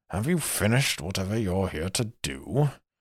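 muttered under the breath. Narrator voices a character speaking to Ben, muttered under his breath. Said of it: "under his breath says".

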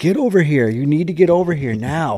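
mock hollering. Retelling calling a dog away from a moose: imitating someone hollering. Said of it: "I start hollering at him".

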